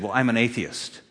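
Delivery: put-on smug voice. Retelling a conversation, quoting a man's answer, mimicking a smug reply. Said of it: "He very smugly said".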